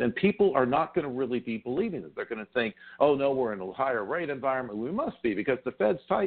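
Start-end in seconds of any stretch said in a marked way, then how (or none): 3.0-6.3 mock, dripping with sarcasm, crowd voice. Voicing what people will think about rates: sarcastically imitating people. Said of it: "that's sarcasm".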